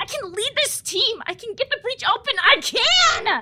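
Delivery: crying, tearful, insistent outburst. Alone, just before another person calls out and interrupts, yelling. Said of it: "Why are you yelling?".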